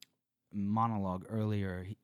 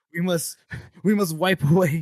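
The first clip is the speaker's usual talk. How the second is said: high, loud, scandalized, indignant outrage. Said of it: "Giselle is, like, indignant".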